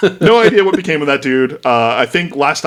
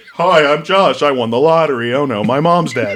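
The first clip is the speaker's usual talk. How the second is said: mock-flat monotone, slower. Mocking a friend back in eighth grade, the speaker imitates Josh's flat monotone. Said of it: "who was just monotone".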